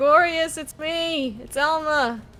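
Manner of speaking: very slow, drawn-out, high calling shout. Calling out in character to make themselves known: shouting out. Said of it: "I shout out".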